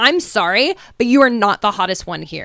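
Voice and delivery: angry, rude ranting tirade. Retelling how a contestant goes off on Sarah: imitating someone going off angrily. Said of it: "She goes off on Sarah".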